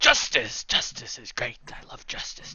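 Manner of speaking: soft mumble, muttered under the breath. Narrating a woman walking off after her speech, mumbling to herself. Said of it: "her just kind of mumbling".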